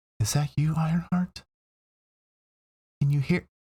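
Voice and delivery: weak, faint, feeble, high voice. A game master voices someone calling out to ironheart in a weak, faint voice. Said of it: "you hear this weak, faint voice".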